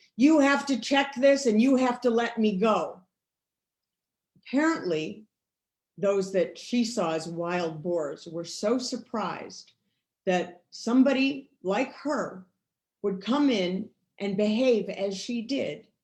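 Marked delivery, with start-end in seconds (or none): 0.2-3.0 mock scream, higher and louder. Retelling how she confronted the officers at the hearing: retelling a scream. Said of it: "she started screaming at them".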